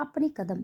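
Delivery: ordinary delivery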